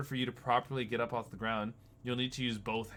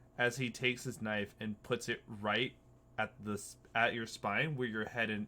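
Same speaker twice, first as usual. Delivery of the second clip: usual speaking voice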